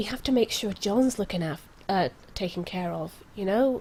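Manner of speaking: voice dropped low. Speaking in character to the group about john, she says this in a lowered voice. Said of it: "She she lowers her voice".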